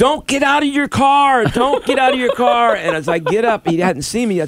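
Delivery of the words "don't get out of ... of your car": very high, urgent, shouted yell. Retelling running over to warn a driver about paint, reenacting own yell. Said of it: "I'm yelling and waving my arms".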